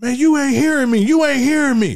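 mock screaming rant, pitch very high. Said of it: "while he was screaming".

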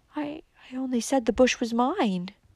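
meek, self-effacing, humble, soft and slow. Asked by her mother to repeat herself, a young woman answers humbly. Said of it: "repeated Valancy humbly".

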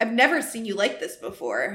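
plain reading voice

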